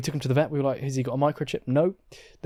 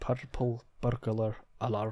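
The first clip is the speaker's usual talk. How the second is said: clumsy, bad put-on Scottish accent; 2 semitones lower, 10 dB quieter than usual. Trying how scottish people say purple burglar alarm, put-on scottish accent. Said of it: "Are you saying that was a bad Scottish accent?".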